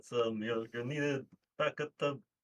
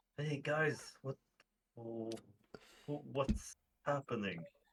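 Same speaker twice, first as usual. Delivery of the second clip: secretive, quiet half-whispered aside; 7 dB quieter than usual. Sneaking up on waking figures in a game: half-whispering quietly in character. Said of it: "whisper quietly to him and be like".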